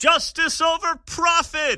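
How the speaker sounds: very high, crackling shout, voice cracking. Imitating an old man shouting in the background: imitating a crackling raised voice. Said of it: "his voice is kinda crackling there".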